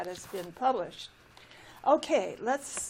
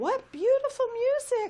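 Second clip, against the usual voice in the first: very high-pitched, loud exclaimed cry; 14 semitones higher, 5 dB louder than usual. Hearing music fill the air, the little tree cries out. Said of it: "cried the little tree".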